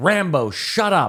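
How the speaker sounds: mock, very high-pitched, shrill holler. Telling a story about a man and his parrot, imitating someone yelling. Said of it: "and then he starts yelling".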